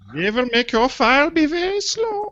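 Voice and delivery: bad put-on German accent. Joking that the Germans slowed the file: bad German accent. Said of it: "I'm terrible at German accent".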